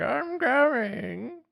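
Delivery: very high-pitched put-on old man voice. Describing a funny voice done earlier, the speaker demonstrates it in an old man voice. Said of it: "it was like that".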